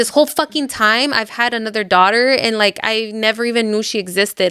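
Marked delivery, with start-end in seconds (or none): none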